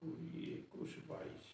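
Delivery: soft, slow whisper under the breath.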